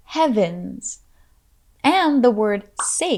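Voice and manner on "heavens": heav in heavens pushed out with stress. Teaching the phrase for heaven's sake, stress on first syllable heav. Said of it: "the emphasis for this phrase is on the first part of heavens".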